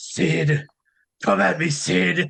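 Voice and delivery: rough, creaky, raspy wrestler-style voice. Retelling a wrestling angle, imitating the Shockmaster voice. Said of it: "it was Ole Anderson doing the voice".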